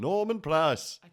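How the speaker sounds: Scouse Liverpool accent. Repeating what the kids make the speaker say; Liverpool accent. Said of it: "In a Liverpool accent".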